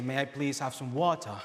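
attempted, put-on British accent. Speaker shows the one phrase they could nail: attempted British accent. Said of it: "trying to emulate, you know, a British accent".

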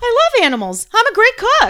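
a little too high, very loud, shrill, swooping. Retelling a woman trying to convince a reluctant man: a little too high pitched. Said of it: "almost like a little too high pitched".

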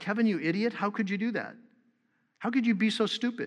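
mock mutter under breath. Retelling own self-talk out loud: imitating muttering under breath. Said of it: "sort of under my breath".

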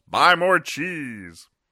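very high, shrill, loud squealing pig yell. Describing a comic where the pig answers the mouse, yelling pig voice. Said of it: "And the pig yells".

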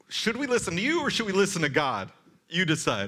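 play-acted pointed, sarcastic tone with swooping pitch. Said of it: "quite sarcastic".

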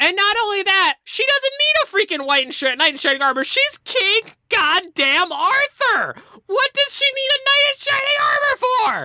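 very high, hoarse, furious ranting voice. Ranting about a movie ending to another speaker: angry, voice going hoarse. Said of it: "my voice is going hoarse over this".

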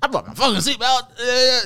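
very high, stretched-out, drawn-out comic voice. Retelling a reality show moment in a car: Kevin Hart voice. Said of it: "you know how he talks".

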